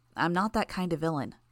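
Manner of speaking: ordinary delivery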